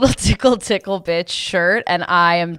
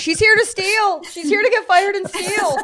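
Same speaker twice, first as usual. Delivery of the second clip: very high, panicked, freaked-out ranting outburst. In a comic story, the manager freaks out about her: mock-panicked manager. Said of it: "The manager starts freaking out".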